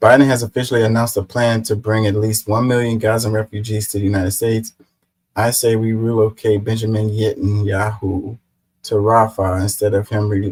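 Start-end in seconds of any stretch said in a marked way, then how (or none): none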